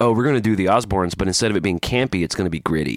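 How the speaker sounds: ordinary talk, nothing marked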